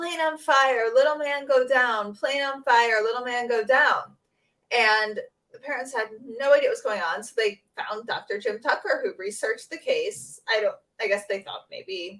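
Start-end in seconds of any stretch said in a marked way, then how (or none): 0.0-4.0 put-on screaming, crying out small child voice. Retelling a little boy's nightmares: imitating a child screaming. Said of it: "he would wake up in the night screaming".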